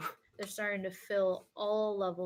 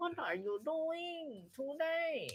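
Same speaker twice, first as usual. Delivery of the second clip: put-on Vietnamese accent, very slow and higher pitched; 8 semitones higher than usual. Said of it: "Vietnamese, it's like".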